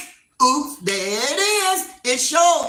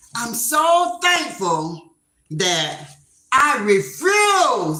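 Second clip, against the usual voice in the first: very slow, deliberate, drawn-out, acted-out delivery; 2 semitones lower than usual. Retelling what a lady said: imitating someone saying it loud. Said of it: "she said it loud like that".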